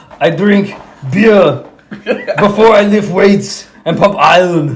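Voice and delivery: loud, aggressive, hard-pushed, winded delivery. Doing an impression of Arnold about lifting weights: aggressive Arnold impression. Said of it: "aggressive Arnold".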